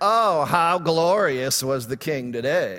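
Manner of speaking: heavily sarcastic, dripping with sarcasm. Explaining a Bible passage, acting out Saul's daughter speaking to David, mock-sarcastic. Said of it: "She was being sarcastic".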